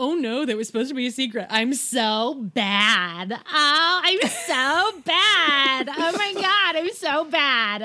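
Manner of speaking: high, loud, delighted gloating with put-on sorrow. Imitating a character who lets a secret slip: imitating Lydia gloating. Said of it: "she relishes, A, lording all of this over her sisters".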